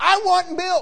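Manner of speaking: put-on screaming, wailing baby voice, high and loud. Describing a baby that wails every 3 hours, imitating a screaming baby. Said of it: "Just screaming".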